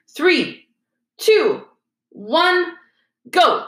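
high, swooping, shouted delivery. A man calls out a countdown to start: shouted countdown. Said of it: "he shouted".

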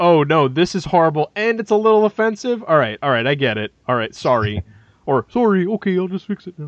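put-on Canadian man voice. Act out the reaction after the first movie, in a George Lucas impression, like a Canadian man. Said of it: "my impression of George Lucas is a is a Canadian man".

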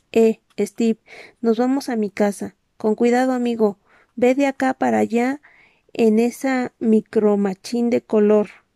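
ordinary delivery

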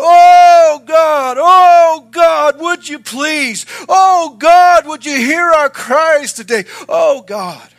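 very high, very loud pleading, long drawn oh. Speaker describing about thirty people praying together, retelling them crying out. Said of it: "They would cry".

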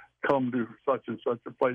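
ordinary talk

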